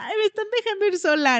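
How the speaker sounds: put-on thrilled little girl voice, high, loud giddy squeal.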